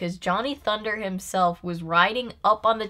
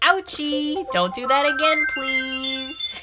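mild, polite, pained ouch, pitched up and gentle; 7 semitones higher than usual. Retelling the gaffer's reaction after almost being electrocuted: imitating Hank. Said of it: "He's like".

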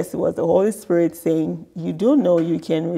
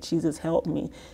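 put-on tearful crying voice, quieter; 8 dB quieter than usual. Retelling being in a lot of pain: imitating own crying plea. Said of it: "I was crying, like".

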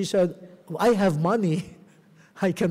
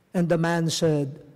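normal talking voice

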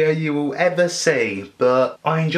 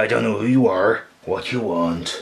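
put-on menacing action-movie voice, lower; 6 semitones lower than usual. Doing an impression of the Taken speech: Liam Neeson Taken speech. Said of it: "the Liam Neeson Taken speech".

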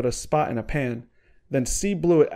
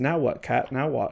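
plain reading voice

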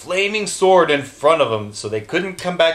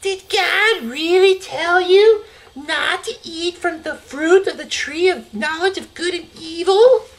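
very high, sneaky hissing snake voice; 14 semitones higher than usual. Narrating the garden story, voicing the snake's question with a hissing snake voice. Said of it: "the snake saw Eve near the tree and hissed".

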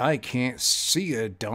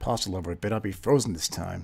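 normal talking voice

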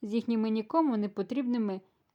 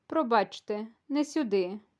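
gentle, kind, slower. The hostess stops the narrator at the wrong door and points to another, gently. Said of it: "лагідно, як жодного разу за вечір".

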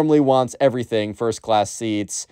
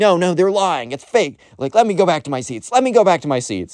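put-on yelling, pitched up high; 6 semitones higher than usual. Retelling a passenger's protest while being held back: imitating someone yelling.

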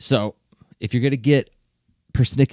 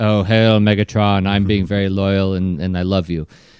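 low, dutiful, loyal-sounding voice; 5 semitones lower than usual. Retelling how Shockwave usually talks to Megatron: mock-loyal Shockwave impression. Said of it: "most of the time he's like".

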